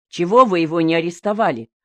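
plain

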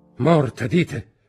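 loud, high shout. Reading a voice crying out at news of a death, shouting. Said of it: "Gridò una voce".

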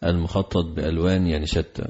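ordinary talk

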